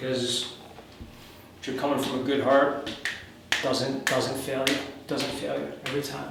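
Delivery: emotional, choked-up, voice catching and breaking. Wrapping up a message before signing off, getting a little choked up. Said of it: "sorry I'm getting a little choked up".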